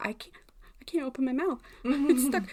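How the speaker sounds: mock frightened panic. Retelling having crowns molded at the dentist: imitating own fright. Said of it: "that scared the shit out of me".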